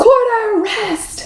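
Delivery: loud high-pitched call. Leading listeners through rhythm names, repeating the term in a loud voice. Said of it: "Try it in a loud voice".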